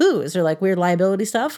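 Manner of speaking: ordinary talk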